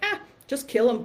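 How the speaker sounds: full-on sarcastic delivery. Retelling a husband's reply in the shower: imitating husband's sarcastic tone. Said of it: "my husband is full of sarcasm".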